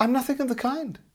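very high, innocent, guileless tone. Peronik answering a suspicious dwarf who calls him a trickster, innocently. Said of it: "as innocently as he knew how".

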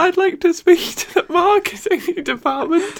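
squeaky voice.

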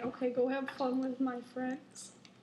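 plain

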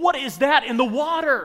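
very loud, very high-pitched shriek. A pastor retells a man at the pool screaming a question, imitating the scream. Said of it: "he screams, and he goes".

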